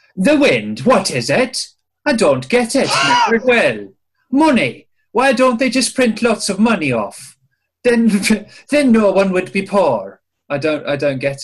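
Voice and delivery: put-on accent slipping into Irish. Reading out a quote from Katie, with an accent slipping into Irish. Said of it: "you've gone a bit Irish there".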